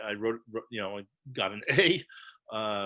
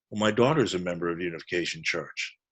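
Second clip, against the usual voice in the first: acted, utterly flat, expressionless, low deadpan voice; 4 semitones lower than usual. Retelling a man's reply after the speaker called his daughter's church a cult, imitating a deadpan reply. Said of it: "looks at me totally deadpan and says".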